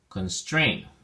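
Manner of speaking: constrain with weight on second syllable strain. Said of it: "the emphasis or stress is on the second syllable".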